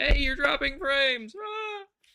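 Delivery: very high, very loud, shrill scream. Imitating the recording software yelling at the speaker, in an OBS screaming impression. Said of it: "my impression of O B S when it's screaming at me".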